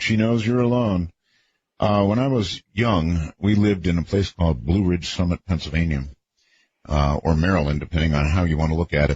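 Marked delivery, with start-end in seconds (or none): none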